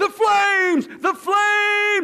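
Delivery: very slow, drawn-out, high, loud shout. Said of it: "he shouted".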